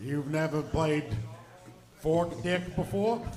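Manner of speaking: put-on weird, strange Boston accent. Joking about Australians, the accent drifting into a weird Boston accent like Mayor Quimby. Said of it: "That turned into a really weird Boston accent".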